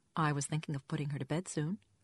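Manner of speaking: plain reading voice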